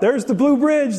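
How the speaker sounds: high, mild mock shout. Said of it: "we would shout it out".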